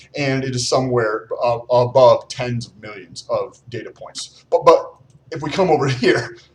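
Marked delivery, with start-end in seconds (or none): 4.5-6.3 words broken up by laughing while talking. Turning to a poll he calls a joke, laughing while talking. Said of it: "I'm laughing because this is such a joke".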